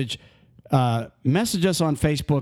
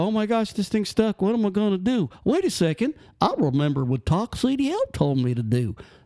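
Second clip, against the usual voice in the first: goofy, silly, high-pitched put-on voice; 6 semitones higher than usual. Acting out a driver stuck in the snow: silly put-on voice. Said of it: "that stupid voice".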